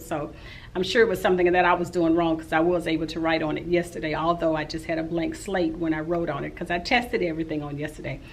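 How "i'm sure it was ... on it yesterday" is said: fast, rushed rambling speech. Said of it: "I know I'm talking real fast".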